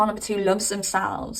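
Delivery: plain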